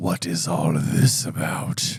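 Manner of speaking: soft, menacing voice dropped low. Trying out a book's line described as spoken in a soft, deadly voice. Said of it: "if that sounded deadly".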